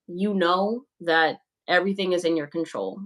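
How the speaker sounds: plain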